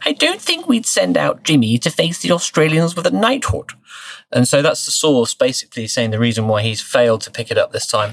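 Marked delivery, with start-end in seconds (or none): 0.0-3.7 upper-class British royal accent, high, swooping, sing-song. Read out a source's words about Jimmy and the Australians, in the Queen's accent. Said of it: "I may do it in the Queen's accent".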